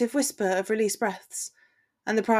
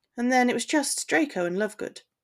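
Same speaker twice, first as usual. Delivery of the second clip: plain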